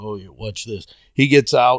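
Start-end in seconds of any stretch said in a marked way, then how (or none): 0.0-0.9 mock very quiet, low speech broken by giggles. Retelling a former drill instructor in his company, imitating giggling while speaking. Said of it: "he's giggling as he says".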